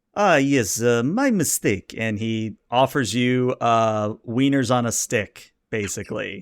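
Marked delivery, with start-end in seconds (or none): 0.1-1.9 poor put-on French waiter accent. In a role-play scene, answering a request for hors d'oeuvres in a poor french accent. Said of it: "I get to do a poor French accent".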